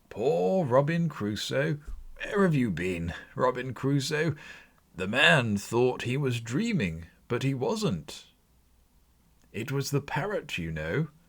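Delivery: high, ecstatic, caught between laughter and tears. Exclaiming in ecstasy over a remembered childhood story, between laughing and crying. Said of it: "[name] exclaimed in ecstasy. / To hear [name] expending all the earnestness of his nature on such subjects, in a most extraordinary voice, between laughing and crying".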